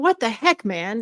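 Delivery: mock-angry, exasperated outburst. Recounting neck pain that kept coming back, retelling being mad. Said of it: "I was mad".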